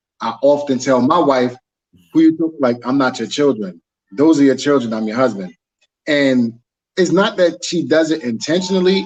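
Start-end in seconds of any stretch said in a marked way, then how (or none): none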